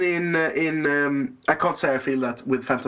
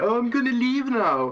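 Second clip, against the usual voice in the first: put-on whiny character voice, much higher; 7 semitones higher than usual. Speaker acts out a funny scene from Empire, in a mock-whiny Han Solo voice. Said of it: "Han Solo is being all whiny".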